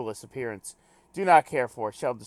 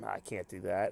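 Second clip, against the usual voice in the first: usual speaking voice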